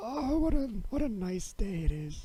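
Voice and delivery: put-on, very high elderly man voice. Imagining the other speaker putting on a voice on a walk: old man voice. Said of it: "putting on an old man voice".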